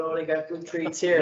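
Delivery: ordinary delivery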